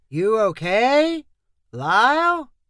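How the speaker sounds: slow, drawn-out, like half-speed recording. After a blow to his helmet, a voice asks if he's okay, slow like half-speed playback. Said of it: "Colin's words sounded slow, like a recording being played at half speed".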